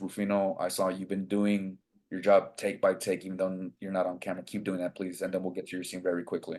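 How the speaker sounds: quiet, hushed, private half-whisper. Retelling a director grabbing his shoulder on set: imitating a director half-whispering. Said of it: "he whispers".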